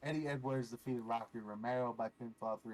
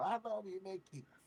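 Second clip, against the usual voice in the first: put-on screaming, high-pitched; 8 semitones higher than usual. Retelling what a fan screamed during the match: imitating a fan screaming. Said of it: "you can hear him screaming".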